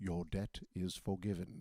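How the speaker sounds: put-on weighty, solemn English accent, drawn out very slowly. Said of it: "that gravitas that comes with that English accent".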